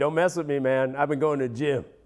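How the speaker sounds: put-on macho, tough monkey voice. Voicing a monkey that goes to the gym: put-on tough gym monkey voice. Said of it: "This is a monkey in the gym".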